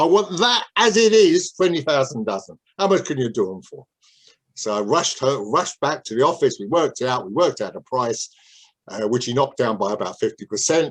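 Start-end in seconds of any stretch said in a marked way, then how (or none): 0.0-3.9 thick, broad, laid-on put-on Cockney accent. Retelling how a man asked him for a price quote, speaker uses a broad Cockney accent. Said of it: "in a broad Cockney accent".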